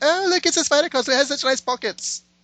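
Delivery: bad British accent. Joking with co-hosts about costumes, doing a bad Catherine Tate impression. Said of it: "that was a um, bad British accent".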